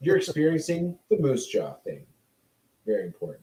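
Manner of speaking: hushed, serious, authoritative knowing tone. Explaining a naming joke, the speaker switches into a 'knowledge is power' tone. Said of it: "Did you notice how I changed my tone of voice".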